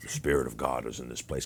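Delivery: low, rough, gritty gravelly voice. Retelling how the leader spoke on the mic: imitating a gravelly voice. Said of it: "got a gravelly voice".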